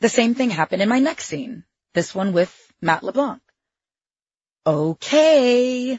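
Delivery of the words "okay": high, drawn-out sing-song voice. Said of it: "the director continued in the sing-song voice".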